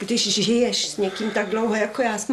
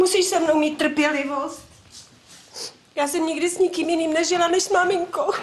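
crying, high and tearful; 5 semitones higher than usual. A woman talks to Vladimír about their life together, crying. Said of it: "Tak už neplač, Jarmilko".

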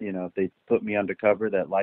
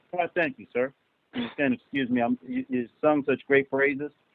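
very high-pitched voice, speaking with mouth full; 10 semitones higher than usual. A teacher thanks a former student for praise, talking with mouth full. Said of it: "I'm sitting here with food in my mouth".

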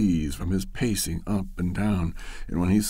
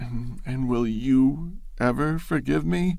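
faint, small, high-pitched little voice; 5 semitones higher than usual. Reading a story, she answers a man who firmly demands to hear everything: faint small voice. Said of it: "She asked in a faint, small voice".

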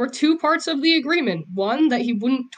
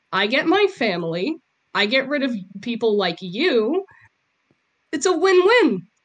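open, sincere, genuine contemptuous disdain. Character explains their choice to another character; genuine contempt. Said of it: "You said that with such genuine despise".

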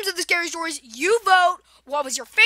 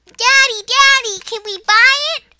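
bad put-on little girl voice, high and loud; 6 semitones higher, 6 dB louder than usual. Retelling a store trip, the speaker voices the little girl asking her daddy: horrible little girl voice. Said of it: "I have horrible girl voices".

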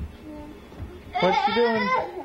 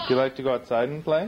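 ordinary talk

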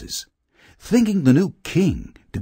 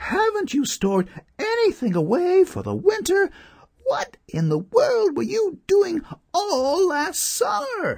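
very high, sudden astonished crying out. The ants answer a starving grasshopper begging for food, crying out in surprise. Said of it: "cried the ants in surprise".

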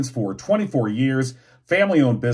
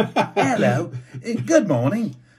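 very slow, drawn-out put-on English accent, high; 7 semitones higher than usual. Trying out a show opening after a suggestion: put-on English accent. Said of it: "Like an English accent or something?".

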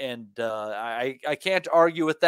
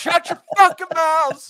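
mock screaming, higher and louder; 7 dB louder than usual. Imitating the other speaker screaming at the kids at home: imitating someone screaming at kids. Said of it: "you gotta scream at 'em all the damn time".

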